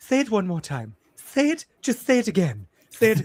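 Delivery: lisp on the s sounds. Retelling a favorite movie scene, in a soft lisping voice. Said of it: "he has like a lisp and a very like soft voice".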